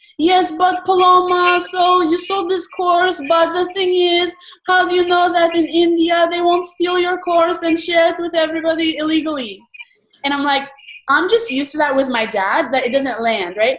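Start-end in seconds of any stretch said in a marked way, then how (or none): 0.2-9.6 put-on Romanian accent, pitched up. Speaker retells her dad's reply to her sale, imitating dad's romanian accent. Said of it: "I'll do his Romanian accent".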